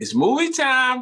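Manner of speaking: very high, loud movie-promo announcer delivery. Saying a catchphrase on request, the way it is said in promotions: promo catchphrase delivery. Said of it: "can you say it the way that you say it in your, in your promotions".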